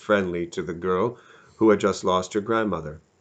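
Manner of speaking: ordinary delivery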